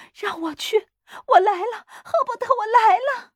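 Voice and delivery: shrill, straining yell pitched way up. Reading a story aloud, a character struggling to get free calls to Herbert, struggling and yelling. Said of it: "他挣扎着叫嚷".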